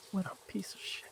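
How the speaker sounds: very soft whisper. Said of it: "I'm whispering to Artax".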